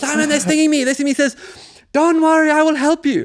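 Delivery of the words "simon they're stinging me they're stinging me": rushed, desperate screaming. Retelling screaming at the beekeeper while being stung in a clearing: retelling screaming at someone. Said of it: "I'm screaming at him".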